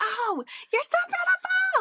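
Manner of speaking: long, high-pitched, drawn-out, gushing yell. Retelling compliments a woman yells out a car window: imitating a woman yelling compliments. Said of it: "she just yells wonderful things out the window".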